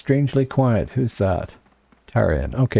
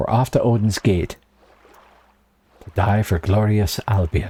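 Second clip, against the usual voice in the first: bad, hammy, terrible put-on Hib accent. Heading off to Odin's Gate in the game: terrible put-on accent. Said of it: "Terrible accent".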